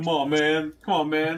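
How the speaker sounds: coaxing, politician-like delivery. Joking about a reluctant hand doing a Joe Biden impression. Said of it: "has to do a Joe Biden impression and say".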